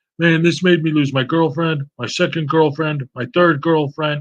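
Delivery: put-on showing-off tone, swaggering and boastful. Retelling how a guy in a recording flexes: imitating someone bragging.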